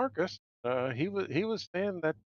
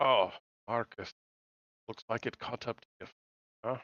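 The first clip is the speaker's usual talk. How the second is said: low, muttered mumble under the breath; 5 semitones lower than usual. Voicing Johan reacting to news of the driver Marcus: mumbling under his breath. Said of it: "hear Johan mumble under his breath".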